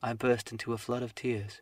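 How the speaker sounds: plain reading voice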